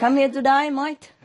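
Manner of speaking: put-on Australian accent. Joking to a listener, then teasing his own talk: put-on Australian accent. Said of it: "Why you talk like Australian?".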